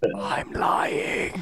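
whispered under the breath, aside to oneself. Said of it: "I just whispered that to myself".

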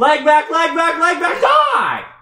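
shrill, very high, full-volume, swooping, drawn-out scream. Fighting in a game, screaming: screaming. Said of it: "why are you screaming so much?".

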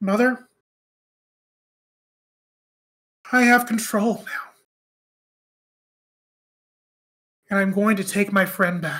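soft, hushed stage whisper. Storyteller narrating a scene, voicing a character's words, half-whispering. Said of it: "she just kind of whispers into there".

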